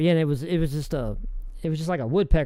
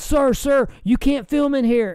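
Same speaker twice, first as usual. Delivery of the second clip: very high, loud hollering; 9 semitones higher, 4 dB louder than usual. Telling how a guard caught him filming in a castle: imitating a guard hollering. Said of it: "you can hear a guard hollering at me".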